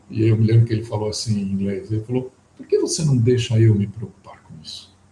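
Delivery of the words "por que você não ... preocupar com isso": grand, swooping storybook-wizard voice. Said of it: "parecia o Gandalf do Senhor dos Anéis falando".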